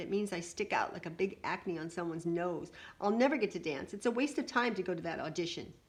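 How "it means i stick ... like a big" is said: ordinary delivery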